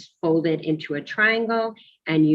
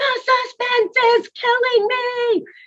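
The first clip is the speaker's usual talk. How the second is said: mock gleeful, very high, joyful squeal; 3 dB louder than usual. Retelling what an excited student kept saying in class: imitating joyful screaming. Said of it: "So he was joyfully screaming".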